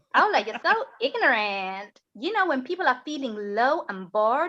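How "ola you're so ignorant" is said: fake, put-on American accent. Repeating what a woman said to the speaker, in a put-on American accent. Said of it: "I'm doing an American accent so the Americans can fit in while they're here".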